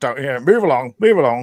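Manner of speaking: country bumpkin accent. Speaker shows how he would do promotional stuff, in a country bumpkin accent. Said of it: "my country bumpkin".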